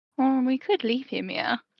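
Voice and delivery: stage whisper, under the breath. Leaning in to speak to Akari in character: half-whispered under her breath. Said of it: "kind of under her breath say".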